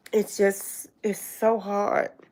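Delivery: on the verge of crying, holding back tears. Apologizing to everybody, a speaker talks while holding back tears. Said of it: "I'm trying not to cry".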